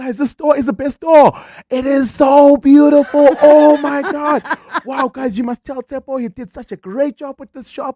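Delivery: high, very loud, thrilled excited shrieking. Retelling a customer raving about the store, imitating excited screaming. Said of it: "She's screaming".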